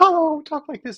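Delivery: super high-pitched cartoon voice. Speaker describing the voices of iconic cartoon characters, super high Mickey Mouse voice. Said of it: "that super high pitched voice".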